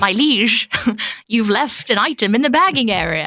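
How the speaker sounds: whimsical, high, cheeky put-on court jester voice. Describing how the self-checkout machine talks, in a court jester voice. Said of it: "court jester".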